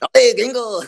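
very high, loud, squeaky high-pitched delivery. Reacting to being compared to Speedy Gonzales: Speedy Gonzales voice. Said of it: "Speedy Gonzalez".

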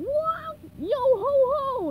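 shrill, loud, slow, drawn-out parrot squawk. A narrator reading a SpongeBob story voices the pirates' fake parrot: squawking Squawky parrot voice. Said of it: "The fake parrot squawked".

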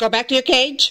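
firm, stern scolding tone. Telling a pet in trouble to go back to its cage, stern, scolding tone. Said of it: "if Pedro's in trouble, this is the tone of the voice that mommy uses".

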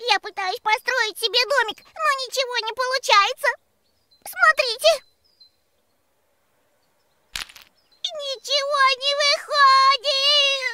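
crying, sobbing through the words, drawn out. A little ant who can't build a house complains to friends, crying. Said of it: "перестань плакать".

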